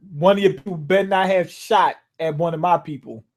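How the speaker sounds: normal talking voice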